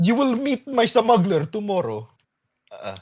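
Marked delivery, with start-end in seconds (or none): 0.0-2.1 put-on Russian accent, higher pitch. Imitating the Russian warden character from the show: imitating a Russian warden. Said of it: "he got his Russian accent".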